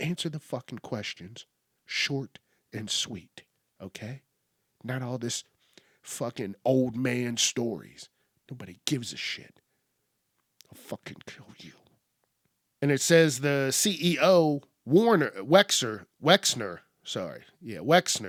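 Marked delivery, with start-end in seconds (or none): 0.0-11.7 imitated whisper, lower and quieter. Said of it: "he whispered it".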